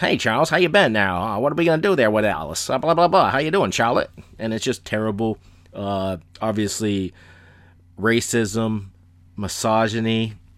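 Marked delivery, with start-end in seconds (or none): 0.0-4.1 put-on fast, loud, stagey old Hollywood film actor delivery. Mocking the acting in old movies you dislike, old-movie actor voice. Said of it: "Everyone had the same voice".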